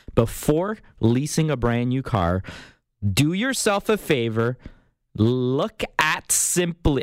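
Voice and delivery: slow, deliberate, spelled-out emphasis.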